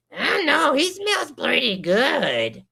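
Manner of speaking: very high fanged monster voice, drawn-out "good". Voicing a fanged turnip creature walking up to someone: fanged turnip creature voice. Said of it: "a turnip with crazy spiked fangs".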